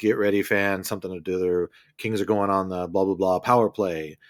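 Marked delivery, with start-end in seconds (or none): none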